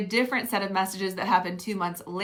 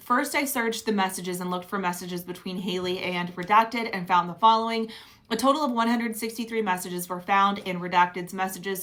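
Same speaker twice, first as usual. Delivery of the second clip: plain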